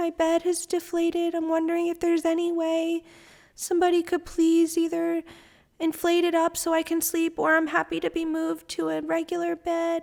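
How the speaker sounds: acted, feeble, meek, humble pleading, pitched high. Retelling asking the nurse at the desk for help, in a put-on weak, meek voice. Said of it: "trying my best to just sound like weak".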